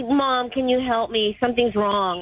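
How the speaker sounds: ordinary talk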